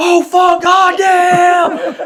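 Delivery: very high, shrill, slowed, drawn-out scream. Retelling being woken at night by a mortar blast: imitating own past screaming. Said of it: "Like just screaming".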